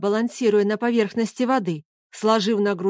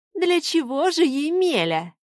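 teasing, scornful, mocking, pitched-up tone; 6 semitones higher than usual. She answers Emelya's angry demands by asking back: mocking question back. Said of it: "насмешливо переспросила она".

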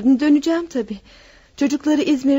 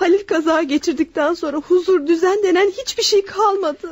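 crying, tearful, speaking through tears; 4 semitones higher than usual. Speaking to their mother, crying. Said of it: "Ağlama yavrucuğum".

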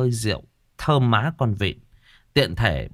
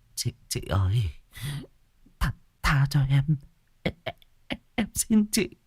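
stammering, stuttering and quieter; 4 semitones higher, 4 dB quieter than usual. Narrator reads a young man's plea to a woman, stammering. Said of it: "mặt tái nhợt lắp bắp".

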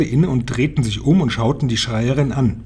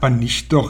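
plain reading voice

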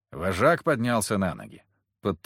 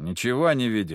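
ordinary delivery

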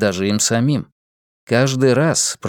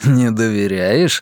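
smirking tone; 2 semitones lower than usual. Reading a story, Vivien leads Eliza away from the house at night: smirking. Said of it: "ухмыльнулся Вивьен".

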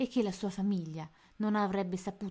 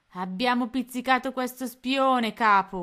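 boastful, proud, raised voice; 4 semitones higher, 8 dB louder than usual. Narrator reads a pirate's report to his captain, said proudly. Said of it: "disse tutto orgoglioso".

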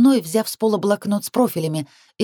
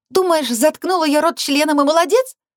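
outraged, boiling-over indignation, pitched up; 7 semitones higher than usual. A narrator reads a woman's retort to a man, indignant. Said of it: "Негодование переполняло меня".

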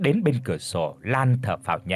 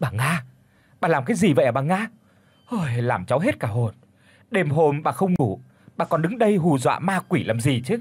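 frightened, alarmed, panicked, startled outburst; 2 semitones higher than usual. A startled woman turns to an old woman standing behind her, frightened. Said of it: "cất giọng hoảng hốt".

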